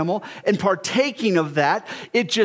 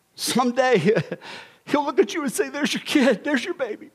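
choked-up voice, emotion welling up mid-sentence; 4 semitones higher than usual. Speaking to someone about a regret they carry, getting choked up. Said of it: "I didn't mean to get emotional".

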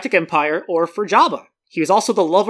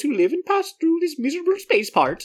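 bad fake Swedish accent, much higher; 9 semitones higher, 4 dB quieter than usual. Voicing a part in a bad swedish accent. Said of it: "that was supposed to be, like, Swedish".

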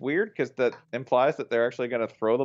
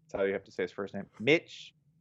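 normal talking voice

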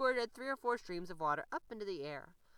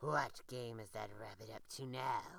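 low, growling, fox-like voice; 6 semitones lower, 4 dB quieter than usual. The fox, watching someone cross the ice bridge, growls. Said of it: "growled the fox".

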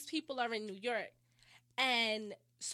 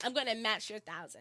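plain

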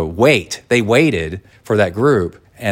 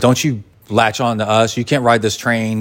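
ordinary talk

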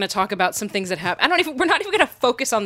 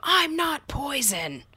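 acted-out, high, mild half-yell; 5 semitones higher, 4 dB quieter than usual. Recounting a man whom passers-by skedaddled around, retelling a yell. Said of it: "he just yelled at them".

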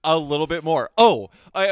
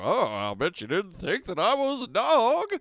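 higher, jowly hound dog voice. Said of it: "he's like".

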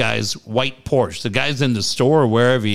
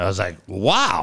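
ordinary delivery

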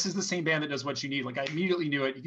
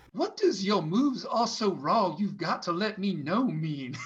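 sweet, genteel, mild-mannered Virginia gentleman voice; 4 semitones higher than usual. Speaker retelling what their dad asked while listening along, in a genteel Virginia voice. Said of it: "like Virginia guy".

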